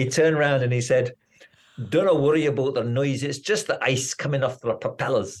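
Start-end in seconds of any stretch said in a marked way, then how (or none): 1.9-5.4 put-on Scottish accent. Quoting the pilot about the plane's awful noise, in a Scottish accent. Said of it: "forgive my Scottish accent".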